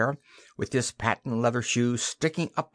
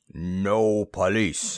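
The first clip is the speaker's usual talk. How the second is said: rumbling, lower pitched; 4 semitones lower than usual. The bomber, hauling Simon upstairs, rumbles to him. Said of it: "rumbled the bomber".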